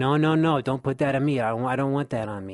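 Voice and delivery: mock tearful, anguished crying out. Retelling the speaker's own past reply to words from God, acting out crying out. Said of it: "And I started crying".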